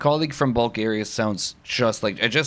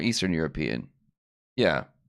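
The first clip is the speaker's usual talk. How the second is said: usual speaking voice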